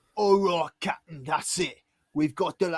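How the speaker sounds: put-on Cockney accent. Voicing a character who reports to the captain: Cockney accent. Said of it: "suddenly Cockney".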